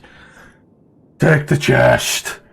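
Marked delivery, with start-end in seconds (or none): 1.2-2.3 loud, slow, drawn-out scream. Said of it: "Yeah, screams".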